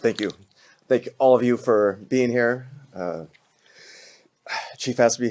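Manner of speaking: voice catching, welling up with emotion. Invited to say a few words, the speaker thanks everyone, getting emotional. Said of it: "sorry, already getting emotional".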